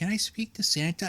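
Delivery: put-on little kid's childlike voice.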